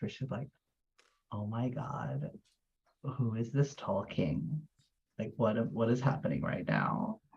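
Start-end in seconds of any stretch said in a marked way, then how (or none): 1.3-7.1 soft, hushed half-whisper, disbelieving. Retelling what someone half-whispered on hearing a stranger talk: imitating a half-whisper.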